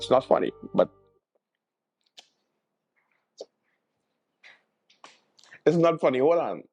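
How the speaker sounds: words breaking up, talking through laughter. Speaker recounting what a woman told the police: laughing while speaking. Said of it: "the reason why I'm laughing".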